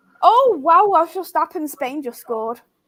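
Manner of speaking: put-on sarcastic voice in a swooping sing-song. Jokingly telling the other speaker a goal was just scored: put-on sarcastic voice. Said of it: "you knew that was my sarcastic voice".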